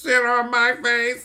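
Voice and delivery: shrill robotic voice, very high, loud. Speaker, who loves the movie, quotes it in the Grandma's Boy robot voice. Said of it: "The robot voice".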